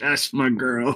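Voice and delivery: half-orc character voice. Voicing a half-orc man who stands up: half-orc man voice. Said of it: "this large half-orc man stand up".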